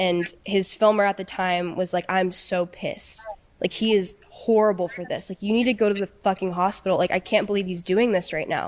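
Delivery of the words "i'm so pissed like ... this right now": imitated upset, complaining tone. Retelling what the filmer said while waiting: imitating someone upset. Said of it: "he was really, really upset".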